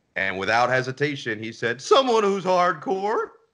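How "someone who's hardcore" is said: very high, loud, fired-up excited squeal. Retelling a job interview answer from the team governor: Steve Ballmer impression. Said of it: "that's my best Steve impression".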